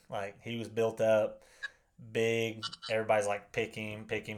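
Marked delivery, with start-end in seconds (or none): none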